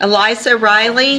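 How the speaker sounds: loud, slow, drawn-out calling out.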